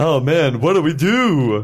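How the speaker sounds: put-on cartoon lion voice. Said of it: "you sound like Snagglepuss whenever you're talking from now".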